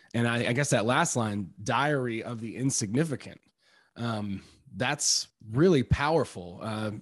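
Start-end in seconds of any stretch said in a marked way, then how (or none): none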